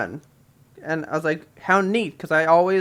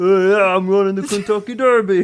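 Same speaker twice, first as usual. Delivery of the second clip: loud, brawny, muscle-bound horse voice; 4 semitones higher, 6 dB louder than usual. Picturing a muscular horse in a bandana and voicing it: voicing a muscular horse. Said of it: "I can just see this horse".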